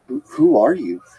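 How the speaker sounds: sleepy, bewildered put-on voice. Retelling waking up after surgery and asking his mom: imitating a groggy, confused voice. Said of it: "groggy, sort of confused look".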